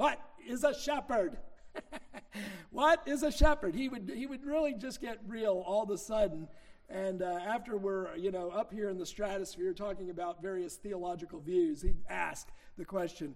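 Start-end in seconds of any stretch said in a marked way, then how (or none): 0.0-3.8 put-on loud, plain Midwestern accent. Recalling what a man used to say, imitating his Midwestern accent. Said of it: "in his good Midwestern accent".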